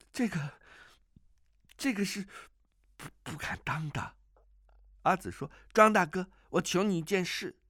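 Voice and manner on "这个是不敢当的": very slow, quavering, trembling voice. Overjoyed, You Tanzhi answers the girl Azi in a trembling voice. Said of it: "颤声着说道".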